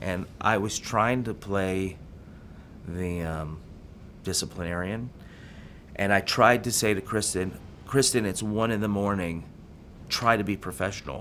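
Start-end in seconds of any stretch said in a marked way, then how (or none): none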